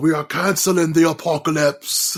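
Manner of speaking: put-on British-accented speech. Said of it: "From, uh, Pacific Rim".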